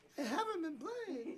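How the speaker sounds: high, laughing, tiny little voice.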